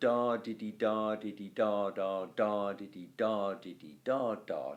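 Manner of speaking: sing-song, bouncing da diddy metre beat.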